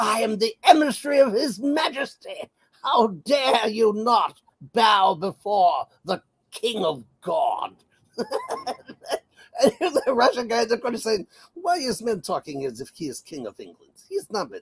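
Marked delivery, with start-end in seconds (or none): 0.0-7.7 put-on plummy, upper-class British accent. Imitating Lammy addressing the Russian representative at the UN: posh British Lammy impression. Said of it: "with this posh British accent".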